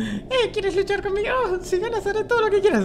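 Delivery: very high, silly, dopey lost-fool voice.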